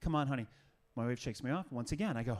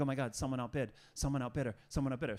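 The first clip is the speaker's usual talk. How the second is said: put-on panicked voice. Retelling watching an auction: imitating own panicked voice. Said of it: "So now I'm panicked".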